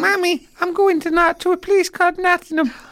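put-on very high, babyish small-child voice. Imagining a hypnotised Keane regressing to childhood, the speaker acts him out: Keane in a babyish voice. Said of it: "talking in a babyish voice".

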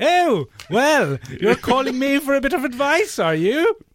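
put-on very high, loud, smug British accent. Retelling how a man doing a southern accent slipped back: put-on smug british accent. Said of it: "goes back to being a British man and goes".

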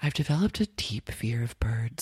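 mock muttering under breath. Retelling what a woman said under her breath while watching chained parrots: retelling a mutter under her breath. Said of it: "under her breath".

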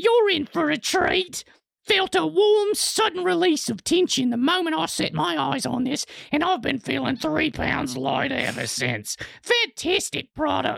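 put-on British accent slipping into Australian. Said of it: "That went back to Australian".

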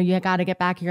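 ordinary delivery

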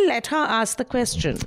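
plain

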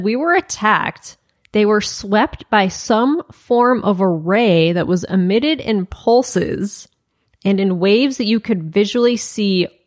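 ordinary delivery

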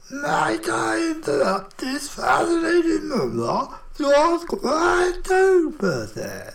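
very high, slow, gravelly croaking voice. A narrator reads the beak's interruption of the exchange; gravelly croaking voice. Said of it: "croaked the beak, his gravelly voice".

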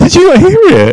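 startled, rattled, very high-pitched and fast.

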